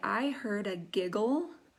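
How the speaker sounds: ordinary delivery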